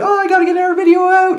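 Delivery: shrill, loud, very high-pitched panicky cry. Recalling pressure to post another video, retelling their loud, high-pitched voice. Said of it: "I would say it in that really loud, high-pitched voice".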